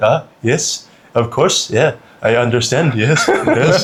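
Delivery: French Canadian guy voice, slow and halting. Retelling a French Canadian friend's reply to the British guy: imitating a French Canadian guy. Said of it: "And the French guy's like".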